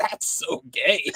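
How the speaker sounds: choked, strangled voice, as if being throttled. Retelling a scene where Chucky is being choked: choked Chucky voice. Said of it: "'cause Chucky's being choked out".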